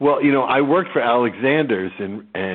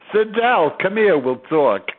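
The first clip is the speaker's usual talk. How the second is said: put-on New York accent, pitched up; 9 semitones higher, 3 dB louder than usual. Showing how the speaker started talking after moving to New York, in a New York accent. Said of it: "suddenly I was talking like this".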